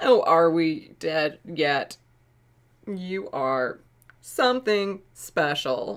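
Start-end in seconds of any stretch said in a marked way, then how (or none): 2.9-6.0 robotic newscaster voice, female anchor style. Speaker reads out a message of kindness, robot anchor woman voice. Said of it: "I started talking like a robot anchor woman".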